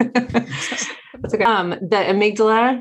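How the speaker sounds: high, slow words laughed through.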